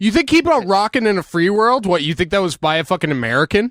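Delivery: shrill, very high, loud, fake-furious ranting. Ranting to the other speaker, who keeps saying calm down: mock-angry rant. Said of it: "I get fucking angry when I fucking say".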